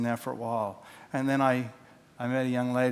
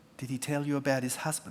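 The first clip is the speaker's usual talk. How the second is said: small, little voice; 2 semitones higher than usual. Retelling a phone call where the other person asks a question, little voice. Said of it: "the little voice goes".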